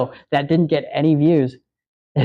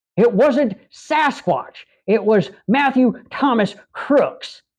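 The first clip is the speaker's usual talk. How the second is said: put-on, higher, stupid-sounding Southern accent; 8 semitones higher than usual. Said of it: "has a stupid Southern accent".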